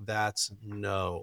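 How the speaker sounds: very quiet, low, hushed voice. Demonstrating a correction while narrowing the eyes a little: lowered voice. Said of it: "I do the thing where you lower your voice".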